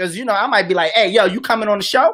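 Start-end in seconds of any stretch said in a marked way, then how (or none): 0.9-2.2 put-on blunt, rough-edged, brash delivery. Show host retelling how they invite guests, retelling a rough delivery. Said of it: "you a little rough".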